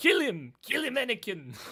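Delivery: very high, very loud, shrill, sinister dark lord yell. While playing a game, speaker urges on another player in a Palpatine voice. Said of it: "why do you actually sound like Palpatine?".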